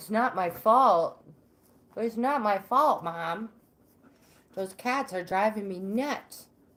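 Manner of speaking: speaking as a dog. Telling how her dog got in trouble barking at cats, voicing the dog. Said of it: "She's like".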